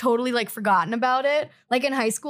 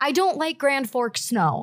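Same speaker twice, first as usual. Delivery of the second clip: ordinary delivery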